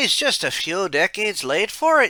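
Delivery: put-on mock Irish accent. Describing a trip back to Ireland, mock Irish accent. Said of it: "I went into my Mac, Mac, mock Irish accent there".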